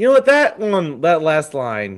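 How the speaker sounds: ordinary talk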